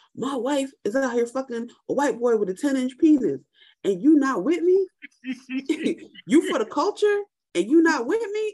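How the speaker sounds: put-on, very high, climbing, rising scream. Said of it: "he's screaming on the phone".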